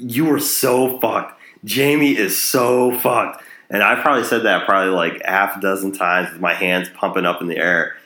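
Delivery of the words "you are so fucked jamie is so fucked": high, slow, drawn-out cheering yell. Retelling jumping up and yelling while watching a show: retelling his own yell. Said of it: "I jumped up and I yelled".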